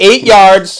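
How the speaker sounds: loud, high, barking coaching-style shout.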